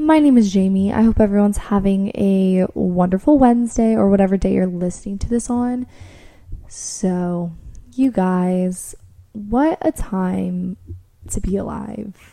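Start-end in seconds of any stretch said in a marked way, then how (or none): 6.7-12.2 dripping, heavy sarcasm, slow and drawn out. Podcast host opening the episode for listeners, in the most sarcastic way possible. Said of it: "I say that in the most sarcastic way possible".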